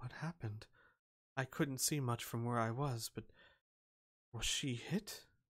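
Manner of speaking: very quiet, hushed voice. A game master voices Shala stepping up beside a player: Shala speaking very quietly. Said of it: "she'd say very quietly".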